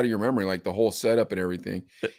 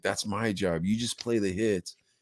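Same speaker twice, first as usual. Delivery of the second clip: put-on angry scolding voice, lower and quieter; 3 semitones lower, 8 dB quieter than usual. Retelling how the program director scolded about new records: imitating angry Paco. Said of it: "He was so mad".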